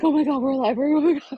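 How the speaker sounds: high, put-on, shaking, tearful, crying relief. Recalling a moment with Dana in their hotel room, imitating shaking and crying. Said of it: "Dana and I kind of shake and cry".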